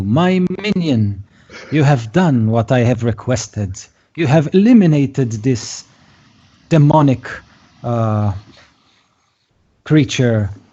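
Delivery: imperious, commanding, called-out tone. Narrator voicing a woman calling out to Gary on his broom, calling out. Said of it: "she calls out to you".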